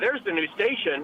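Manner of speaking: ordinary delivery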